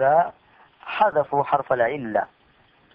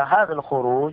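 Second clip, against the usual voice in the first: ordinary talk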